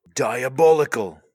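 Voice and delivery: put-on loud, high British accent, belted out. Two speakers take turns at Butcher from The Boys; a Butcher impression attempt. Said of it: "I think you gotta take a crack at it".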